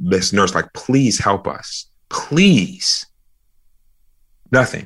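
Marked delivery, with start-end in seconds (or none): 0.7-3.1 slow, meek, gentle, non-threatening pleading. Recounting begging a nurse for help, the speaker repeats the plea: retelling non-threatening begging. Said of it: "In the most non-threatening way I can".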